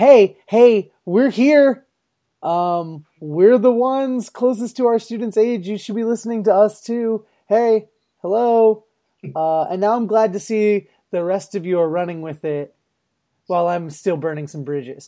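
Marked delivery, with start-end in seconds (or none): 0.0-8.8 acted-out, loud shouted calling voice. Retelling calling out in grad school to be heard: imitating own past shouting. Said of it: "I was the one shouting, like".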